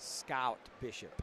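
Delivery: heavily exaggerated, accentuated American accent. Pronouncing a person's name, accentuating the american accent. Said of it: "I accentuate the American accent".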